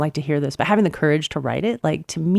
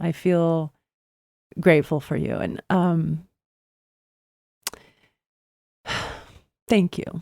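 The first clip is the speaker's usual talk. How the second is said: a little emotional, touched and moved. Host thanking an author guest for sharing their story, a little emotional. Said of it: "I'm a little emotional".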